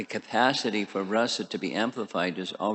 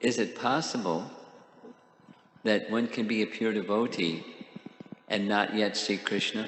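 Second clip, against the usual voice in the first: slow, unhurried, deliberate, carefully paced voice. Repeating a question for a listener who didn't follow, speaking slowly. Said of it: "I'm going to speak slowly".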